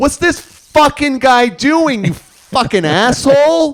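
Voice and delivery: mock very loud, very high, shrill angry tirade. Talking about road rage, the speaker does a Jason Drive road-rage impression. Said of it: "I'm gonna do my impression of Jason Drive".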